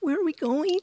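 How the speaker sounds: very high, thin, strained, squeaky voice. Recalling hearing their own voice as the car pulled off the freeway, squeaky strained voice. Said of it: "this squeaky kind of strained place".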